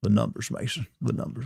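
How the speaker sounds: breathed out, half-whispered. Showing the way he usually does a Matthew McConaughey impression. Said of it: "my Matthew McConaughey is usually like".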